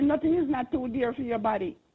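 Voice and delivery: ordinary talk, nothing marked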